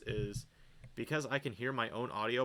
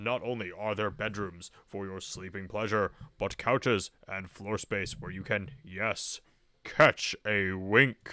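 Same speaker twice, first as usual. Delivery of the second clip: put-on announcer voice, louder; 3 semitones lower, 7 dB louder than usual. Reading a game's house description aloud: announcer voice. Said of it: "I think we're past the announcer voice gag".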